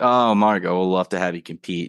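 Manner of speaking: ordinary talk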